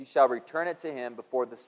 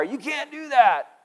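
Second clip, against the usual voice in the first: mock very high-pitched, drawn-out yell; 12 semitones higher, 6 dB louder than usual. Retelling what was yelled at the umpire: retelling a yell at the umpire. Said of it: "and I'm yelling at the umpire".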